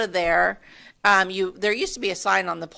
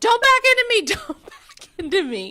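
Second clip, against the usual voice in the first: acted-out, shrill, very high-pitched, swooping yell; 4 dB louder than usual. Recounting a lady almost backing into their car, retelling a yell. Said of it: "and I'm yelling".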